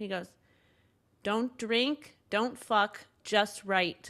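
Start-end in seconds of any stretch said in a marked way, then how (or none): 1.2-4.1 whispered speech. Retelling words whispered into the ear after a set: imitating someone whispering. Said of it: "leaned over and whispered into my ear".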